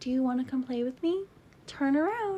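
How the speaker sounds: put-on hushed, eerie, creepy small-girl voice. Retelling a YouTube video of a little girl, imitating the little girl's voice. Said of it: "this little girl on YouTube".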